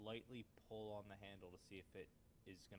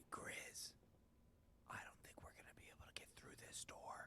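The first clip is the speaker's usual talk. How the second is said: speaking in a whisper. Playing a character, telling a teammate about a door: whispering. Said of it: "Why are we whispering?".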